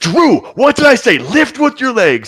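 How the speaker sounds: very high-pitched, screaming, scolding tone. Narrating a woman who heals with a smack, screaming at them again. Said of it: "starts screaming at them again".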